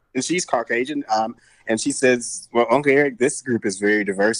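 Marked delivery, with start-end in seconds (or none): 2.5-4.4 put-on knowing little-kid voice, dry and sarcastic. Retelling what an eight-year-old god niece said at a competition: imitating a sarcastic child. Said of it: "being sarcastic".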